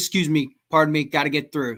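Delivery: fast, brisk, very stern no-nonsense tone. Speaker retelling getting through crowds at metal shows, putting on a stern tone. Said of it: "I would just speak in a very stern t- tone of voice".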